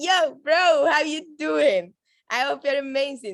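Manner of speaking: loud, upbeat, high-energy voice. Showing how to greet someone when joining a call, with an energetic greeting. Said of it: "always want to come with energy".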